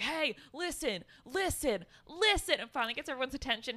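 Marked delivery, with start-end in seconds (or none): 0.0-2.6 acted high, drawn-out yelling scream. Retelling how a movie character gets everyone's attention: imitating a character screaming. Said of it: "screams at everyone".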